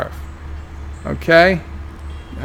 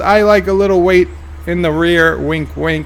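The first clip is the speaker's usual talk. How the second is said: usual speaking voice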